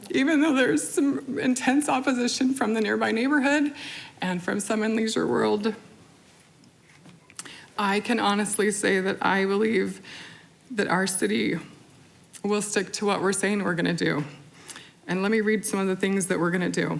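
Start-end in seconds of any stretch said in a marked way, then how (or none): 0.1-14.2 close to crying, voice catching. Speaking before constituents, close to crying. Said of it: "Oh, I'm gonna cry, sorry".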